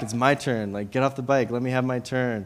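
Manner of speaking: ordinary talk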